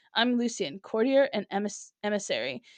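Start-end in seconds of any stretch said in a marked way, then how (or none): none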